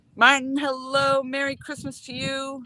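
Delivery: high, screamed call, as if across a distance. Greeting a viewer on the live stream: screaming a greeting. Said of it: "I don't know why I'm screaming".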